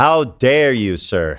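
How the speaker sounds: put-on indignant tone. Mocking a commenter's reply, in mock outrage. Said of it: "He's like".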